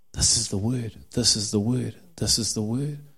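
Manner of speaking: hushed stage half-whisper, words said three times. Retelling what he says, repeating the line: imitating a half-whisper. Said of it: "And he whispers".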